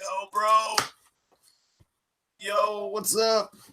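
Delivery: very slow, high, barely audible lost-voice speech. Retelling a phone call with a friend who has no voice. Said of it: "He has no voice".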